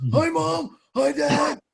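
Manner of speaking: very high, slow, drawn-out, leaky, hoarse rasp. Speaker retells a joke about someone's first words at birth, imitating a hoarse, air-leaking voice. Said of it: "he still needs to get his larynx fixed".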